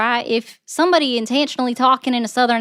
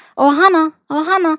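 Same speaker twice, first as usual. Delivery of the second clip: raspy alien cartoon voice; 5 semitones higher, 5 dB louder than usual. Speaker addresses a viewer who objected to her voices, in a Stitch voice. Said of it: "talking like Stitch and say".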